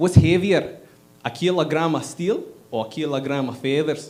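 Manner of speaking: put-on Scottish accent all the way through. Speaker recalling an old viral YouTube clip, Scottish impression. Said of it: "I tried the Scottish impression. I go".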